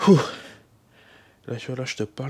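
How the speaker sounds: out of breath, winded, puffing words. Mid-workout, talking to the viewer between sets, out of breath. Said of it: "je suis essoufflé".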